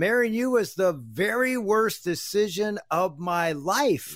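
put-on, heated, high-pitched yelling. Recounting a drive early in their marriage, the husband retells his wife yelling at him. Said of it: "Ann's yelling at me in the car".

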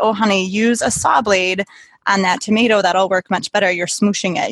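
plain

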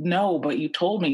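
high drawn-out scream. Recounting being told the driver would meet them elsewhere, retelling own screaming. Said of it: "I just start screaming and yelling like".

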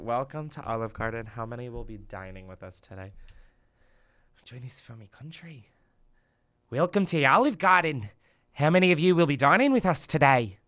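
clumsy put-on Scottish accent, drifting off. Asked by another speaker to say a set sentence in Scottish: attempted Scottish accent. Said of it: "I want you to do Scottish".

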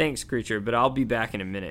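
ordinary delivery

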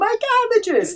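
sudden, very high-pitched screamed outburst. Retelling how the cabbage merchant reacts when his cabbages get wrecked: imitating a scream. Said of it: "he screams".

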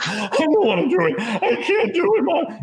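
mock convulsing sobs, very high and swooping. Retelling a boy of twelve or thirteen pleading with his mom, imitating a boy sobbing. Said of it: "not crying so much as he is convulsing and sobbing".

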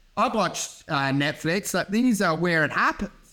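ordinary delivery

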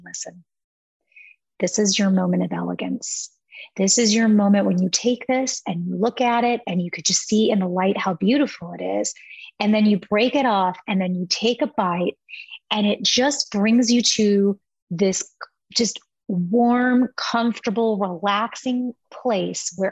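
voice brought down low. Recalling how he talked about the chocolate, retelling in a lowered voice. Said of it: "I would lower my voice and I'd say".

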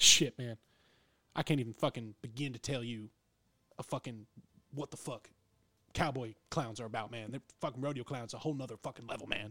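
put-on rodeo cowboy's accent. Retelling what a cowboy at the bar said about rodeo clowns: imitating the cowboy's accent. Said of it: "I'm gonna do the best I can to do his accent".

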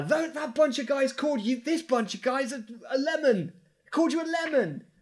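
very high-pitched, shrill in-character yell. Yelling a distraction at a mob as a character: yelling in character. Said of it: "And I'm gonna yell".

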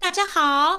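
very high sweetness placed forward in the face. Demonstrating a voice placed at the front of the face, sweet forward-placed voice. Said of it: "一直练到脸的前面的蝶豆腔，就是让那个声音甜美。我举例哦".

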